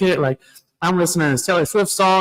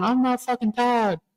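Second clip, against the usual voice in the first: mock small child voice, higher and quieter; 7 semitones higher, 4 dB quieter than usual. Retelling a video of a little girl: imitating a little girl. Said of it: "that video of that little girl going".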